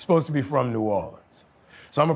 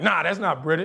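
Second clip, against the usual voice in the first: usual speaking voice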